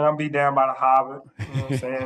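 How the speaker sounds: rough attempt at Boston accent. Asked how their boston accent is coming along, put-on boston accent. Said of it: "my Boston accent, I think I think it's coming a long way".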